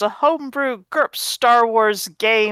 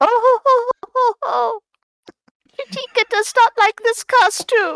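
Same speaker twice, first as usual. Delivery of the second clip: put-on creature voice, slower; 13 semitones higher than usual. Player in costume speaking as Chitika, in the Chitika voice. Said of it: "Can I do the Chitika voice".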